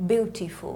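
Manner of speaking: British English pronunciation, "beautiful" with a crisp t.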